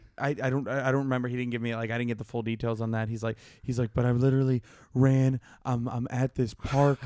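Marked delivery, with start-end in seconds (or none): 3.9-7.0 mock muffled whispering. Retelling a buddy hiding in a park: imitating a friend whispering.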